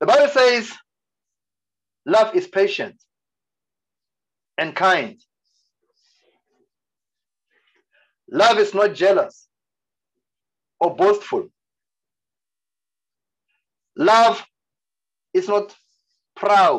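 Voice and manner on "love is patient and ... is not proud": slow, deliberate reading pace. Reading a Bible passage on love aloud to listeners: reading slowly. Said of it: "I'm reading it slowly".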